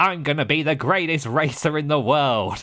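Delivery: cocky, boastful voice, high and drawn-out. Retelling how the brash racer boasts while driving: imitating his funny voice. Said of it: "His voice was so funny".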